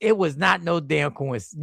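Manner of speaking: normal talking voice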